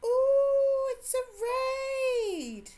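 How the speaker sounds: very high, slow, drawn-out excited cry of delight.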